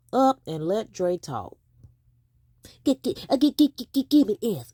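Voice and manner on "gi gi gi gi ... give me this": taunting stammer repeating gi-, pitched up. Mocking another speaker's way of asking for something: imitating someone stuttering. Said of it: "stuttering Steve".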